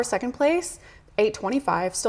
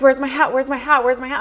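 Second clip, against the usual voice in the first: high, loud yelling, repeated over and over; 5 semitones higher, 7 dB louder than usual. Retelling how he yelled at the speaker, imitating him yelling. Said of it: "So he's like yelling at me like".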